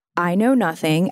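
ordinary delivery

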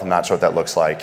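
normal talking voice

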